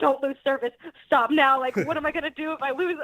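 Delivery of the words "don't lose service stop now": mock desperate, panicked, frantic voice. Retelling pulling over to answer a surprise call, afraid of losing service: acting out her past panic.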